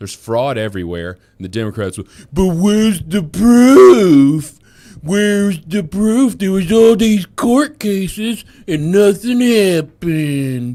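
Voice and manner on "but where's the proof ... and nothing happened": very loud, high, drawn-out droopy voice. Mocking the Democrats' question: Droopy dog voice. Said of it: "you sound like that dog in the elevator".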